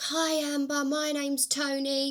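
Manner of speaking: brash, pushy, bolshy, boisterous, slightly high voice. Retelling a phone call from a stranger: imitating a bolshy, boisterous voice. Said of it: "this real bolshy, boisterous voice".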